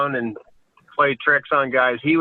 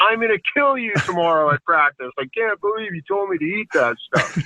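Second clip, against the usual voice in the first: play-acted heated, half-shouted, mildly angry yell; 3 semitones higher than usual. Retelling how a teammate yelled after eating wasabi: imitating Gino yelling. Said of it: "he's yelling at me going".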